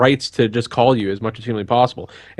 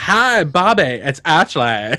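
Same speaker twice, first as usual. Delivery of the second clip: put-on California accent, much slower; 4 semitones higher than usual. Retelling how a played message opens, imitating a California accent. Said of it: "that's actually the California accent".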